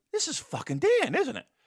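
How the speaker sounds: muttered under the breath. Retelling his reaction to a phone call from London: imitating muttering under breath. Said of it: "under my breath".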